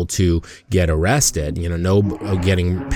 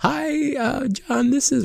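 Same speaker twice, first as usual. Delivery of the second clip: put-on woman's voice, higher; 3 dB quieter than usual. Retelling a producer's joke phone message: imitating a woman's voice. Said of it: "speaking in a woman's voice".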